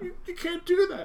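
mock restrained crying. Retelling a film scene where a woman pleads before shooting: imitating restrained crying. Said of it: "she's crying, but she's not, like, over the top crying".

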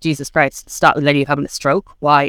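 ordinary delivery

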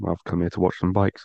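ordinary talk

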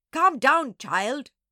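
very loud, high-pitched, irritated snapping. The Doberman answers a wailing Nana, snapping. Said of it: "the Doberman snapped".

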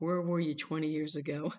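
mock mumbling mutter under breath. Retelling a story about the listener's father: imitating a mumble under breath. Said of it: "he mumbles under his breath".

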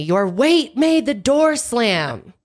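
shrill, drawn-out screaming. Retelling a fight with a roommate: imitating Natalie screaming. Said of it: "she screamed at me".

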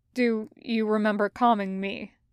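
plain reading voice

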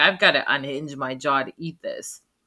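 ordinary talk, nothing marked

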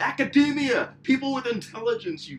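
shrill, very high, loud yell. The speaker recalls yelling out at a guy walking to his car, retelling the yell. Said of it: "I'm just like yelling out".

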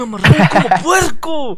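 mock bitter, helpless, hateful shout, pitched high. Show a friend how another man says his line, imitating someone's helplessness and hatred. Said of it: "con impotencia y odio, así de".

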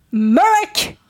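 fiercest, aggressive, high furious-mother voice. In a roleplay scene, a mother who saw her son fall calls him in an aggressive angry mom voice. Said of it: "Using my most aggressive, angry mom voice possible".

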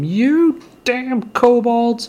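piercing high-pitched scream. Voicing a dwarf screaming down the mountain at kobolds: screaming as Marnier.

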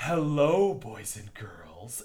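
put-on low, breathy, condescending superior tone. Describing adults who walk into a group of children, imitating their mock-breathy superior voice. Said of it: "And it's very breathy, and it's always, and it's very superior".

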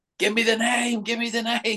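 frantic, pleading, very high voice. Retelling a film scene where she demands the name: imitating a frantic plea. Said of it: "And then she's frantic".

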